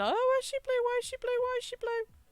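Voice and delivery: mock frantic, very high-pitched, rushed, rising panic. Retelling the dad's reaction to a blue newborn: imitating panicked dad. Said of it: "my dad started panicking, going".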